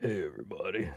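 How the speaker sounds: very quiet, hushed, put-on deep voice. Trying to fake a deep voice after saying they can't: fake deep voice. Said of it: "I can't even fake a deep voice".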